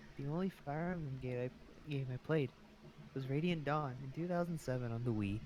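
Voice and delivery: whispered speech. Answering the others about playing the game before, whispering. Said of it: "Why are you whispering?".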